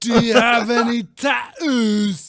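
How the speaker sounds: very loud, slow put-on English accent. Asking the others a question in a put-on accent: Tom Hart accent. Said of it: "This is the Tom Hart accent".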